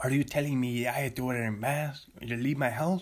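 put-on fake French accent. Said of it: "my French accent is turning Mexican".

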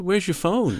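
put-on American accent, very high-pitched. Retelling what a coworker asked: imitating an american accent. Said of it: "I'm not just putting on the accent".

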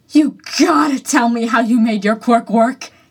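gasped out. Reading a story aloud, Izuku, pinned to the floor, speaks to his opponent: gasping. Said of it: "he gasped".

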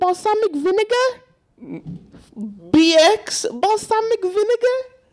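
very high, bouncy, swooping puppet voice. Telling a friend about the Elmo and Rocco video; Elmo impression. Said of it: "Is this your Elmo impression?".

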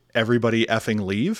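usual speaking voice

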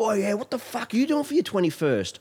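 very high, loud, excited chatter. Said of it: "they were talking real loud".

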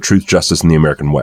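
ordinary talk

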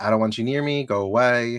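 put-on frustrated voice. Retelling a character's words from the bathtub: imitating a frustrated character. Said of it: "she's just frustrated".

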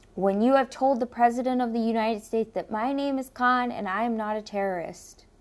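ordinary talk

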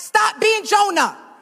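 sassy, loud, pitched very high, with attitude. Showing the listeners how to say the line to a neighbor: with an attitude. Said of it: "Say it with an attitude".

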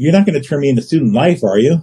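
put-on sheepish, timid, quiet voice. Retelling what a man at a bar asked: imitating a sheepish quiet voice. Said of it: "he got real quiet".

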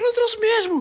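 frantic, desperate, very high-pitched pleading. Retelling what a woman said when she came back to them, acting out desperation.

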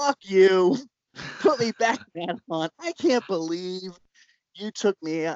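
high, mild half-shout. Retelling how she told Russ to put her back in the haunt: retelling a yell. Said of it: "And she's yelling".

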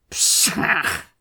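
hissed exclamation. Stretching his whole body, he scoffs, hissing. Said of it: "he hissed".

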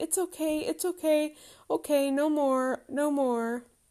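put-on anxious little boy's voice, high-pitched and slow. Retelling a son running from the vacuum cleaner: imitating Harry anxious. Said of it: "The most anxious he gets".

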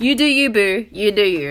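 really obnoxious, loud put-on voice. Retelling how she repeats the speaker's phrases, mimicking her really obnoxious voice. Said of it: "she says it in a really obnoxious voice".

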